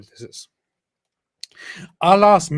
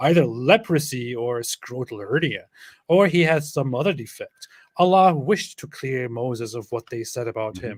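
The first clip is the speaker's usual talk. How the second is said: normal talking voice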